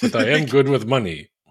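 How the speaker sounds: put-on Russian oligarch-style accent. Playing a rich oligarch bit for another speaker, Fyodor Romanov oligarch voice. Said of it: "I love your oligarch voice".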